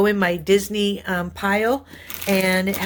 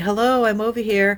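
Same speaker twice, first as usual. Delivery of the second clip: put-on talking machine voice. Noticing the coffee machine finish, voicing the coffee machine. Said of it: "That was the machine. It's saying".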